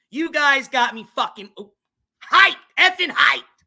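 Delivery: loud, high-pitched, fired-up excited yell. Thanking viewers after the channel hit 3.5k, yelling. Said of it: "I said I wasn't gonna yell".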